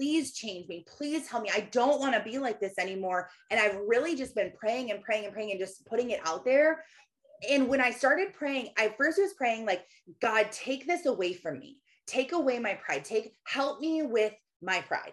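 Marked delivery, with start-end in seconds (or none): 0.0-3.3 acted-out, mock, desperate begging voice. Recounting daily prayers on their knees, reenacting a begging prayer. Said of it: "I am like begging and pleading with God".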